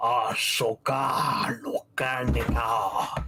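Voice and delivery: deep, echoing demon voice, like four voices at once. Voicing a demon speaking in its own tongue: deep echoing demon voice. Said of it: "deep, echoing, like, four voices speaking at once".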